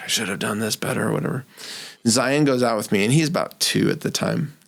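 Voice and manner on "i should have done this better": imitated muttering under breath, quieter. Retelling pulling weeds for the last time: imitating own mumbling under breath. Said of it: "mumbling under my breath".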